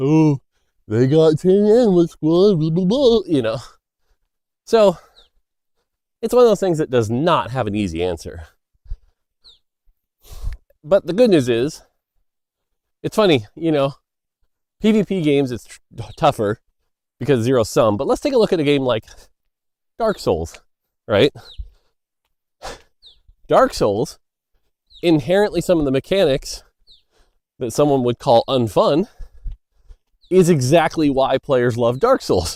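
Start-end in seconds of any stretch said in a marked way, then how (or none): 0.0-3.2 high-pitched sarcastic mockery. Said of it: "Here comes the sarcasm".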